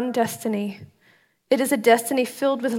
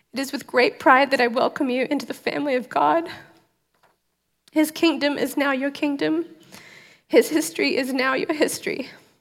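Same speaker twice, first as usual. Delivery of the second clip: choked up, near tears; 3 semitones higher than usual. Reading a welcome aloud over people holding communion elements, about to cry. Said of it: "I'm gonna cry again".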